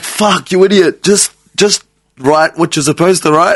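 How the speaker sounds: angry voice. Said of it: "and I was like".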